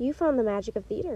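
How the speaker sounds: ordinary delivery, nothing marked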